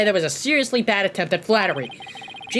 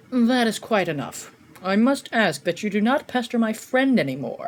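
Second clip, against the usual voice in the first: lofty, self-important, pompous, haughty voice. Voicing a character he calls the Joker guy: pompous voice. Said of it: "I'm gonna give him like a pompous voice".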